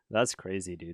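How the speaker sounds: flat deadpan with no excitement at all. Showing how they love saying a favorite phrase, flat, no excitement. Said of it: "With no excitement in my voice".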